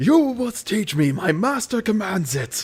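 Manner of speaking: orc yelling. Narrating a scene, voicing an orc yelling at another character. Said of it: "the orc starts yelling".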